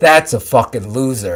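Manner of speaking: put-on deep voice with a Brooklyn accent. Retelling what his father said to him, father's deep Brooklyn accent. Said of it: "he's got that deep Brooklyn accent".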